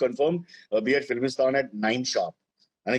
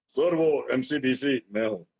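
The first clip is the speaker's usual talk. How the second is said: deep, low baritone delivery. Retelling the famous actor's reply: imitating a famous baritone. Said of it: "India's most famous baritone says".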